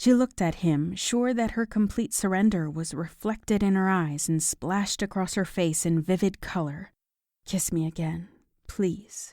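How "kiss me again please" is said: soft, husky, murmured voice. Reading a story aloud, a character asks for another kiss: soft husky voice. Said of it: "she said in a soft, husky voice".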